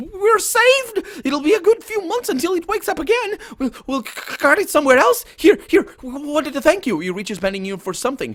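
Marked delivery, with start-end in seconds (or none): 0.0-7.0 very high, loud, chattering gnome voice. Narrating a game, voicing a gnome thanking the listeners: high-pitched gnome voice. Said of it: "chatter in high uh, high pitched voice".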